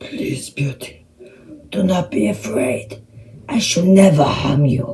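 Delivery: rough-edged, gruff sound but tender, gentle delivery. Reading Beauty and the Beast, the Beast speaks to a terrified Beauty: gruff, gentle Beast voice. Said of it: "he spoke in a gruff, gentle voice".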